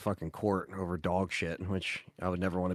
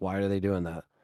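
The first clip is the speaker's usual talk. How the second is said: plain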